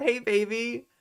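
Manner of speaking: high-pitched pickup-artist come-on voice. Repeating the impression for the others: imitating a pickup artist. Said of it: "that's my impression of a pickup artist".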